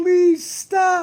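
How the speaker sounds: very high, blubbering, sobbing soprano voice. Retelling how a man broke down under attack, imitating a soprano crying plea. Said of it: "His voice went up to a soprano".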